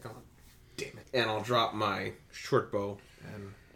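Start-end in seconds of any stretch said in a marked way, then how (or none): 0.1-1.1 muttered under breath, much quieter. Player voicing their character right after a missed shot, muttered under breath. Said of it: "mutters under his breath".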